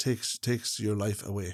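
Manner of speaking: put-on low, lonely voice. Retelling what an elderly woman said about family: imitating a low, lonely voice. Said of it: "in a very low and lonely voice".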